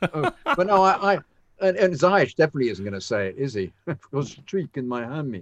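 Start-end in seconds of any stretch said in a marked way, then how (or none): 3.8-5.4 put-on Dutch accent, spoken quieter. Joking with co-hosts about how a player would say it: Dutch accent as Ziyech. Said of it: "I did my Dutch accent".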